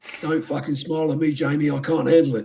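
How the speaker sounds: line spoken in a put-on English accent. Apologizing for his own voice, then showing it off: Roy from Ted Lasso impression. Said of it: "If I put it on an English accent, I'd sound like Roy".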